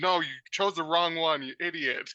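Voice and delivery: put-on exasperated yell, high-pitched. Retelling watching the show alone and yelling at it: imitating own yelling. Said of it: "I'm always yelling".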